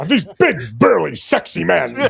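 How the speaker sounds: loud, pushed-out put-on voice with swooping pitch. Showing how the introduction could have sounded: Tim Curry voice. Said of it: "she could have done the Tim Curry voice".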